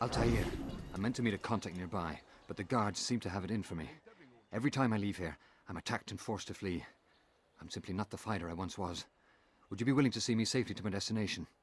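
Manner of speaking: put-on Irish-accented voice. A gentleman character speaks to the listener in an Irish accent. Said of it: "this Irish voiced gentleman".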